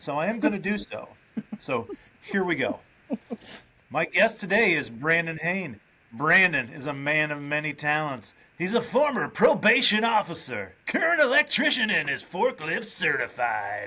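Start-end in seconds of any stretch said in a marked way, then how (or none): 3.9-13.9 loud club DJ announcer voice. Introducing today's guest as if a dj at a strip club. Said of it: "read it as though I am a D J at a".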